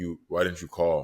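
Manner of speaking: usual speaking voice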